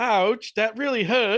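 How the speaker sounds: put-on English accent. Retelling what a partner said in her sleep: imitating Tara's English accent. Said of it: "she had a fucking English accent".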